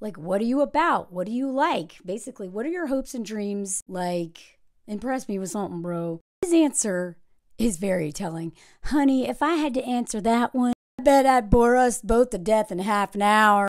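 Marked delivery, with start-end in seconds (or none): 8.8-13.7 put-on southern American accent. Retelling Leo's answer to a question, giving him a put-on southern accent. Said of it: "I don't know why I'm giving Leo a southern accent".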